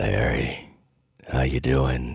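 eerie, slow, drawn-out, spooky taunting voice. Retelling a prank phone call to Larry: imitating Aaron's spooky voice.

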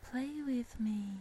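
put-on small child half-whispering, barely there. A storyteller voicing an unseen child right behind the listener; tiny half-whispering child voice. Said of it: "a tiny whispering voice of a small child".

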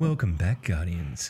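dull, dry, boring storyteller narration voice. Teasing Matt about his lore videos: imitating Matt's boring lore voice. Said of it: "in your boring lore voice".

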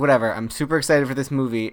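usual speaking voice

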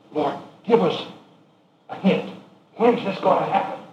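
high, hushed, secretive near-whisper. Acting out the disciples asking Jesus privately: acting out a near-whisper. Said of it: "almost whisper to him".

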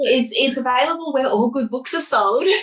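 advert voice-over, announcer promo voice. Asked where people can get the book, answer in your promo voice. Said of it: "That's my promo voice".

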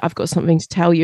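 dead-serious, dramatic, acted-out delivery, low and grave. Retelling what a personal trainer said at a session: imitating someone very serious. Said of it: "said to me so seriously".

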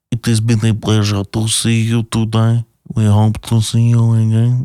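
speaking with a French accent. Saying goodbye to podcast listeners: French Jacques Cousteau voice. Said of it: "It's like a French Jacques Cousteau".

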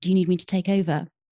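quiet, gentle speech. Retelling what Joe said while grabbing the speaker's arm, retelling a quiet, gentle offer. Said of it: "he said really quietly".

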